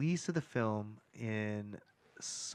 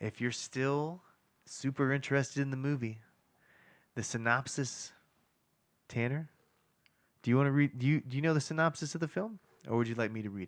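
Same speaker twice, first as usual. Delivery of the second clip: silky, smooth, easy-flowing delivery. Asking Tanner whether he wants to read the film synopsis, smooth voice. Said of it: "you've got a smooth voice going".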